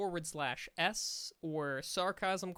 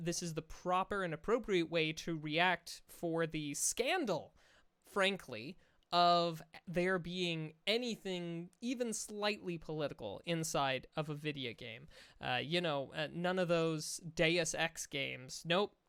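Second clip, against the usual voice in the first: normal talking voice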